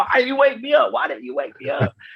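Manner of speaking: mock, high-pitched yelling. Recounting oversleeping, the speaker retells a yell at the girl who tried waking him. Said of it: "I'm yelling at the girl".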